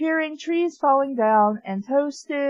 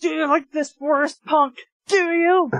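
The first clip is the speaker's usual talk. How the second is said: mock irritated, hostile, angry tone; 2 semitones higher, 3 dB louder than usual. Replaying a character's question to Pikachu in an exaggerated way: mock-angry pissed tone. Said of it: "Why would you ask that in a pissed tone?".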